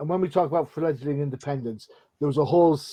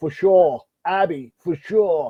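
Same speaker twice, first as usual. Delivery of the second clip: loud, put-on Boston accent; 3 semitones higher, 5 dB louder than usual. Retelling answering Abby about who voices Kingpin, in the speaker's best Boston accent. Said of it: "in my best Boston accent".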